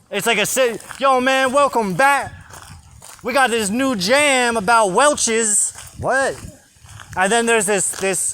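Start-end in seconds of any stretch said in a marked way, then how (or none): 0.9-5.7 pitched-up hip hop radio DJ patter, street slang. Complaining about the Welch's commercials, the speaker mimics one: Welch's commercial impression.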